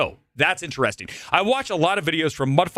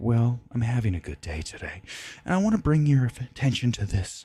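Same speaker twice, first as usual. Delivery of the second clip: understated, chill, laid-back low voice; 6 semitones lower, 4 dB quieter than usual. Imitating a channel host who always talks calmly: understated, chill John Levi voice. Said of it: "he is really understated".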